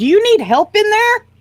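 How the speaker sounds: loud, very high call. No one answers the door, so a player's character calls inside in a loud voice. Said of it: "Use my loud voice".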